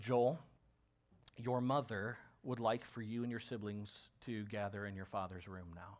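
acted sorrowful, sombre voice, heavy with sorrow. Retelling a church elder calling the family to a room: imitating a sorrowful tone. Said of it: "his tone is one in which, you know, he, it, it's just communicating sorrow".

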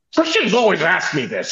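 mad, worked-up griping. Retelling how someone got mad at a question: imitating someone getting mad. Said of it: "he gets all mad about Christians asking him".

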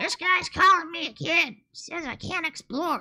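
very high, very loud, shrill, shouting bee voice. Voicing a bee explorer in a game, shouting bee explorer voice. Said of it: "I'm not some random bee".

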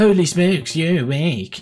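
put-on mocking tone. Repeating a character's line back, imitating a mocking tone. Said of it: "is that person just saying it in like a mocking tone?".

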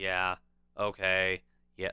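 flat monotone, one note, no inflection. Imitating someone who isn't in the mindset, answering: flat monotone delivery. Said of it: "like monotone like that".

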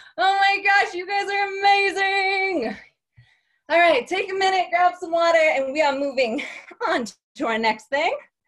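winded, panting, catching breath between words. Leading a workout for the group right after the counts, out of breath. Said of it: "I'm so out of breath".

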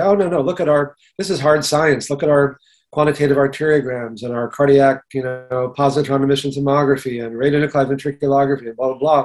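ordinary talk

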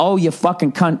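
put-on yelling. Complaining about an automated phone system, showing what yelling into it sounds like, retelling a yell. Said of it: "if you yell".

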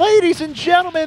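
high, loud, hyped-up excited call.

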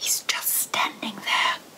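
hushed whisper under the breath. Maggie leads Mo into her room and tells him, whispered. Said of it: "whispered Maggie".

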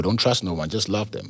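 ordinary delivery

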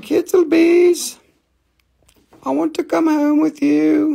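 put-on tiny little old lady voice, very high, very loud. Voicing a quartz piece that calls the listener's name, in a little old lady voice. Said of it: "my little quartz voice. It sounds like the little old lady".

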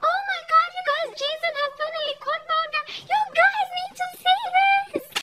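acted, very high, shrill, carrying yell. Retelling how a girl in a mango tree called everyone: imitating a girl shouting. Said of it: "she was shouting".

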